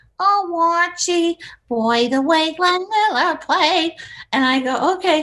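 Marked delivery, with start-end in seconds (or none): 0.2-4.0 put-on Brooklyn accent, drawn out. Retelling how he demonstrated the accent wanted for a Shakespeare spoof, in Edith Bunker's Brooklyn accent. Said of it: "And he goes, "Like you know, Edith Bunker, like."".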